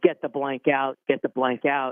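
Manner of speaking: ordinary talk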